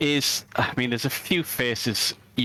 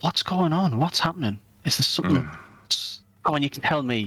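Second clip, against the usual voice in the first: lowered, quiet voice. Voicing a character who leans in and looks around: lowered voice. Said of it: "lowers his voice".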